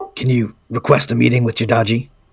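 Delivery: whispering in a put-on character voice. Floating closer to Safine in the game and asking quietly: whispering in character. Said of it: "kind of whisper down".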